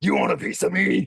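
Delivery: big, rough, gravelly rasping voice. Describing Ole Anderson voicing someone in a mask, big gravelly voice. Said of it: "doing this big gravelly voice".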